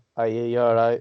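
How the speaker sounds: put-on strong, broad northern English accent. Speaker retells answering a shop worker in Belgium, proper northern English accent. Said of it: "Just this proper northern".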